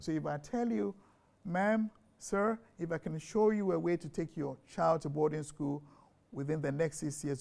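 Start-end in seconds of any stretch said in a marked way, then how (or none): 1.4-7.4 put-on British-accented voice. Acting out a sales pitch to a parent: put-on british accent. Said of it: "I could hear the, the British accent in there".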